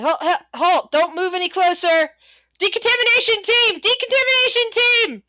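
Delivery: high, loud yell. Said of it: "someone else is yelling".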